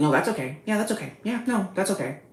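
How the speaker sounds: mocking, scornful, creepy put-on voice. Retelling comments from the comment section: mocking commenters. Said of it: "freaks in my comment section being like".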